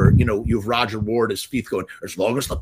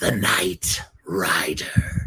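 hissed, threatening, menacing voice; 3 semitones lower than usual. A narrator reads the toe cutter's line as he grips a man's face, hissing. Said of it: "he hissed".

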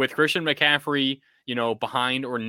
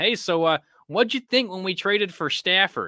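high-pitched, halting delivery with hesitations; 7 semitones higher than usual. Retelling a podcast question from one coach to another: Sean McVay impression. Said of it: "That's my best Sean McVay impression".

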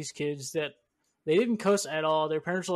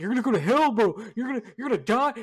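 mock-panicked kids voice, higher and louder; 5 semitones higher, 4 dB louder than usual. Recalling how kids reacted every time the speaker cussed, imitating freaked-out kids. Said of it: "They're freaking the fuck out".

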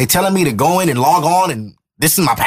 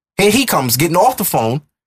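ordinary talk

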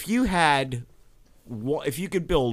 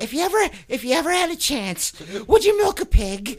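very high-pitched, questioning tone. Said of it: "We'd start out real high pitched".

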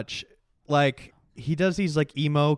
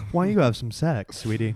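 fake, mock sultry seductive voice; 3 semitones lower than usual. Joking back and forth about people who love New York, in a put-on sex voice. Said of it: "I can't stop doing that voice".

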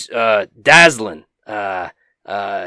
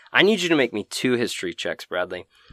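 normal talking voice

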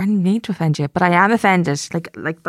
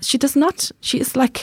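mock German accent, slightly higher. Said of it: "Are you putting on accent there?".

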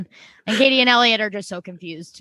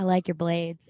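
put-on flat deadpan delivery; 3 semitones lower, 5 dB quieter than usual. Recapping an episode, quoting Fenn's best line: deadpan Fenn impression. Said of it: "so deadpan".

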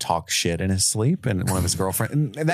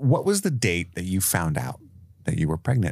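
usual speaking voice

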